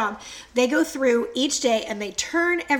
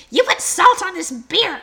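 mock angry scolding, raised and high-pitched; 7 semitones higher, 7 dB louder than usual. Speaker retells her husband getting mad at her, imitating husband's mad voice. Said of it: "that's going to be my husband voice".

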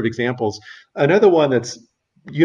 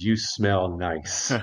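low, hushed husky murmur, close to ear; 6 semitones lower, 8 dB quieter than usual. Acting out a strange man speaking right by someone's ear, husky voice. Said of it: "kind of with a husky voice says".

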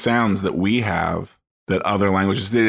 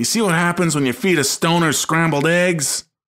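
worked-up rambling rant, pitched a bit high; 9 semitones higher than usual. Retelling a censored movie clip, imitating John Goodman ranting. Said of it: "And he's like".

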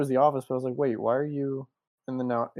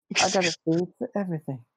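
high, teasing put-on voice; 5 semitones higher than usual. Joking about a theory-loving character, doing a Mike Tyson impression. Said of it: "I'm done making fun of Mike Tyson".

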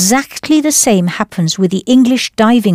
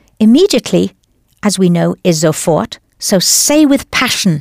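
plain

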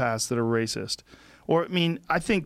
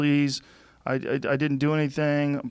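put-on crying male voice, slower. Retelling a SWAT arrest, the man on the ground pleads: imitating a man crying. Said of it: "He's crying".

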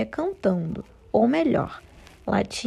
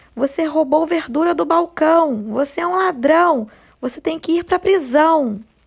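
furious yelling, loud and high-pitched; 6 semitones higher, 6 dB louder than usual. Reading a story aloud, the manager accuses the rabbit: shouting angrily. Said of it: "começou a gritar com cara de pau".

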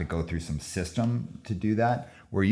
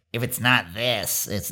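put-on mocking voice of a rule-obsessed purist; 4 semitones higher than usual. Talking about rules-oriented people in hardcore punk, quoting them while doing a put-on voice. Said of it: "I'm doing a voice".

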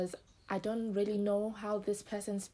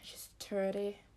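put-on Irish accent, thirty said as turdy; 5 dB quieter than usual. Imitating a woman from last year's Love Island: imitated Irish accent. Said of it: "I'm gonna try imitate a person".

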